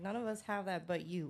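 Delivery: ordinary talk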